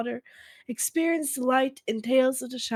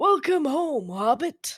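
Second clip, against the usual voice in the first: put-on talking like an old man; 3 semitones higher than usual. Reading text from a website, in a Gandalf old man voice. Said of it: "I'm gonna do an old man voice".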